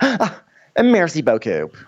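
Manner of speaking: play-acted obnoxious, patronising, condescending politeness, high-pitched. Retelling how a diner thanked the waitress: imitating an obnoxious, condescending tone. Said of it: "obnoxious, condescending way".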